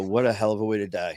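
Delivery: speaking while sobbing. Recalling a man's death in hospital, retelling own sobbing words to the guys. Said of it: "I'm just sobbing and I go".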